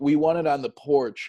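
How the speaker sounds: mock yelling, lightly barked out. Retelling what residents said about a delivered paper: imitating residents yelling. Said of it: "The residents would yell at me".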